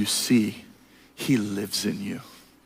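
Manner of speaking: put-on soft, slow, drawn-out voice of an old sage. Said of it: "He says".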